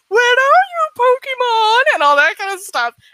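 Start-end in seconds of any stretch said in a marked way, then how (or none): 0.1-1.9 very high, slow, drawn-out shout. Retelling pursuers calling out in a dark forest: imitating Team Rocket shouting. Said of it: "shouting and going, like".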